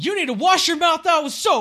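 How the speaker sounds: very high, rushed, panicked blurt. Retelling what they blurted out when he turned towards them, retelling a panicked blurt. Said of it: "I panicked. And so, I just said, I blurted out".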